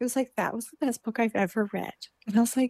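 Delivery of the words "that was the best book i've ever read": put-on tearful, crying voice. Retelling a friend's phone call about a lent book: imitating a tearful friend. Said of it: "he called me in tears".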